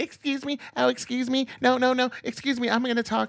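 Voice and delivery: very high-pitched, scornful woman's voice. Mocking how Pam Bondi handled a confrontation: imitating Pam Bondi. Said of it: "She handled it just like a woman would".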